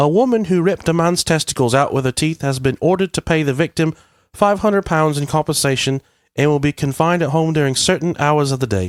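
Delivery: put-on British accent, reading-aloud tone. Reading a funny news article aloud after offering to: put-on British accent. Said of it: "Shall I read this in a British accent?".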